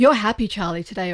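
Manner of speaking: ordinary talk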